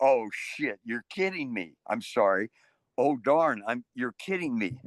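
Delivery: ordinary delivery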